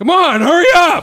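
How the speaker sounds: very high, loud, drawn-out hollering yell. Recalling waiting drunk in a car behind slow customers, retelling yelling from a car. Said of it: "I started yelling out of the car that".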